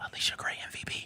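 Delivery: hushed, barely voiced whisper. Ranking guards with another speaker, naming number one: whispering. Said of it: "Why do you keep whispering that part?".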